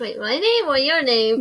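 plain reading voice

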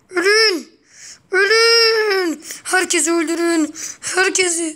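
loud shouting, "Ölün" drawn out. Speaking to friends while another voice tells him not to yell, shouting. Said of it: "Bağırma".

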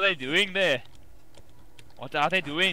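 bad Scottish accent drifting toward Indian accent. Retelling what a man would say, in a bad Scottish accent. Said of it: "That sounds more Indian than Scottish".

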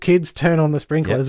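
ordinary talk, nothing marked

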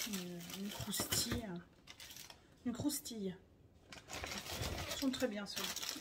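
hushed talk.

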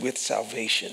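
imitated quiet muttering. Retelling adding words quietly after a blessing: retelling a mutter under breath. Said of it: "under my voice".

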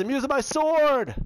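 very high, yelled call. Yelling the game's call to attack with a sword: yelling out. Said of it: "I can yell out".

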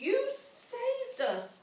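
very high exclaiming cry. Narrating a fairy tale, a child speaks after the witch falls into the oven, crying out. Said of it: "cried Hansel".

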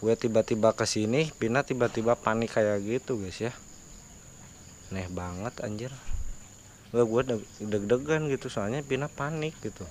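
quiet, hushed tone.

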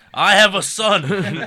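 shrill, very high, booming, drawn-out yell. Retelling what the man chasing them yelled while grabbing a friend, retelling a yell. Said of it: "grabs one of our friends and yells".

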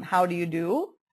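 ordinary talk

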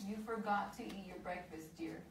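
plain

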